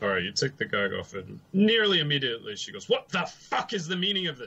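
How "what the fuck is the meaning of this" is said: furious, angry, high-pitched screaming. The game master voices a woman just ungagged by her captors; angry screaming. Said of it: "she's screaming angrily".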